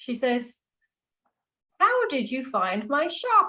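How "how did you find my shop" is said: put-on genuinely curious, lilting old voice, pitched up. Game master voicing a shopkeeper woman asking the players a question, genuinely curious. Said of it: "Genuinely curious".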